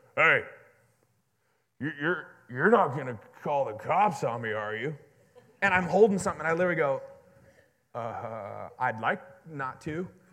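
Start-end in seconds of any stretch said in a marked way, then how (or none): 0.2-5.0 put-on deep, powerful, commanding voice, louder. Retelling a man's first words to you, imitating a deep, commanding voice. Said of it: "he's got this deep, commanding, powerful voice".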